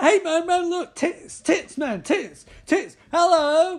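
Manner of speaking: very high, loud, drawn-out excited babble. Retelling a movie scene where guys see a woman: imitating guys freaking out. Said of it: "they start freaking out".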